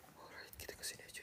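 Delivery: hushed, breathy, voiceless whisper.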